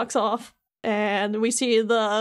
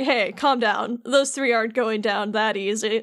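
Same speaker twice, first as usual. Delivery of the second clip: usual speaking voice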